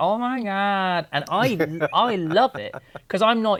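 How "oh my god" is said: put-on California valley girl accent, exclaimed. The speaker imitates someone from the valley entering their space: valley person voice. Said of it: "a valley person".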